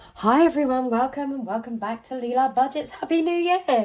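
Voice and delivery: sick-sounding voice, high and very loud. Greeting viewers after being unwell over christmas: voice still sick. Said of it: "You can hear it in my voice still".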